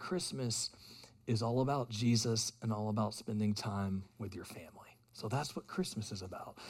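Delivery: hushed, tender, very soft and gentle voice. Retelling how a woman explained Christmas to Ivy, in the softest voice. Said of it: "in the softest voice".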